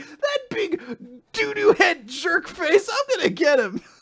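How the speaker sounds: very high, soft, wacky, goofy comedy voice. Mocking how a character reacts to his brother's death: mock wacky comedy tone. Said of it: "having this wacky comedy moment".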